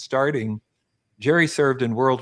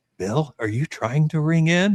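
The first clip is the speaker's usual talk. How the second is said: whispering, pitched higher; 3 semitones higher than usual. Retelling what a producer asked during a rehearsal: imitating a producer whispering. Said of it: "the producer came up to me during the rehearsal and whispers".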